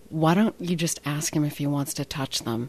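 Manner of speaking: very quiet, hushed, understated murmur. Retelling what a friend advised about the staring coworker: imitating someone speaking very quietly. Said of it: "And very quietly, she just said".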